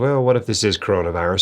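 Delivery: normal talking voice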